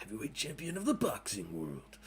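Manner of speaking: cartoon caped-hero voice with swinging pitch. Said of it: "You sound like, uh, Will Arnett as Batman".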